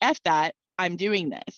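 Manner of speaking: put-on cheeky, sassy, defiant tone. Recounting answering a huge voice at twenty-one, retelling sassy defiance. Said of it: "being the sassy twenty-one year old that I was".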